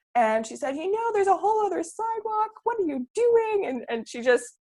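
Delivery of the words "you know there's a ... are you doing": mock shrill, very high-pitched scolding yell. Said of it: "she starts yelling at me".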